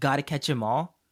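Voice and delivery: ordinary talk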